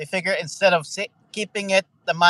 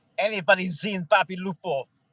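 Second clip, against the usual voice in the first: bad, terrible, put-on fake Italian accent; 3 semitones higher than usual. Repeating the bit after being told it's terrible: bad italian accent. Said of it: "It's a terrible accent".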